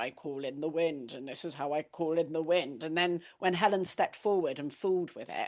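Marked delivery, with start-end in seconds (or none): 0.0-2.8 put-on, very serious, solemn ceremonial tone. Retelling how everyone on a pilgrimage spoke at ceremony: imitating a very serious voice. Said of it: "very serious voice of".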